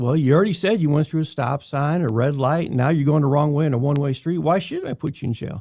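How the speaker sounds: ordinary talk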